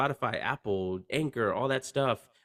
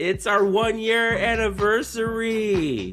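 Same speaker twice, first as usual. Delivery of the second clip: cheesy 90s radio DJ voice, higher and louder; 9 semitones higher, 6 dB louder than usual. Announcing the show's one-year anniversary: cheesy nineties DJ voice. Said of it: "You sound like a cheesy nineties D J".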